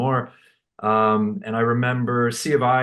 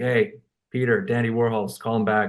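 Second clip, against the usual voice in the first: dry, expressionless, flat monotone delivery. Retelling how Joe passed on a message: imitating Joe's deadpan monotone. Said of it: "kinda monotone, deadpan guy".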